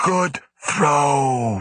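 effortful, labored, rasping gorilla voice, "throw" stretched out. The gorilla calls back to Grant during their game of catch, Sheena's labored, rasping voice. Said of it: "in her labored, rasping voice".

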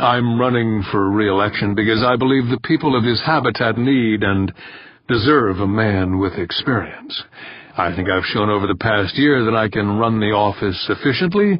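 ordinary delivery

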